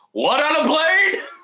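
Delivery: very high, slow, drawn-out delivery. Joking about putting a werewolf on a plane: Samuel L. Jackson impression. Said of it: "Samuel L. Jackson's like".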